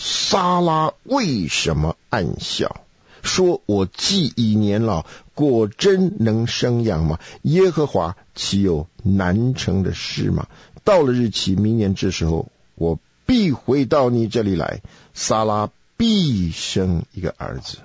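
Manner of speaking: slow, weighty, heavily emphatic delivery.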